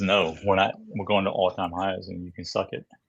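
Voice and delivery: ordinary talk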